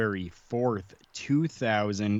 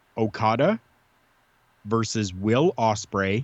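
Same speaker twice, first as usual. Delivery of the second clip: slow, deliberate, carefully paced, spelled out word by word. Speaker recommending a wrestling match to fans, spelling out its title: saying it slowly. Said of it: "I'll say it slow enough here for you".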